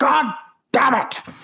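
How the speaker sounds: very high, mad, fuming outburst. Retelling a co-star's reaction to fast line learning: imitating an angry outburst. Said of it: "he got so mad".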